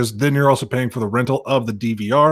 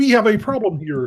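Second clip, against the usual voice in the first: very high pitch, taken slow; 10 semitones higher than usual. Imagining the man with a Kermit on his desk starting to talk, in a Kermit the Frog voice. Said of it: "start talking like Kermit the Frog".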